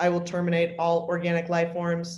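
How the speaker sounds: flat, neutral, emotionless, affectless robot voice. Demonstrating a robot character's way of talking, in a neutral, emotionless robot voice. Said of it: "neutral, emotionless um, way of talking".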